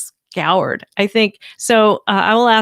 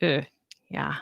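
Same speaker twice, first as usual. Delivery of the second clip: usual speaking voice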